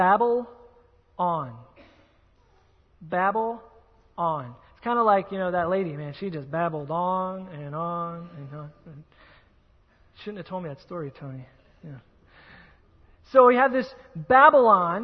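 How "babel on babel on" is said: very slow, deliberate, drawn-out delivery. Explaining where a word comes from, say it slower. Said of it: "let me say it kind of slower".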